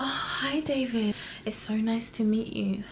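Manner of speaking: soft, breathy, sultry, sexy voice. Showing how to greet David with sexiness from the get-go, breathy, sexy voice. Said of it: "it needs to be a little bit breathy or something".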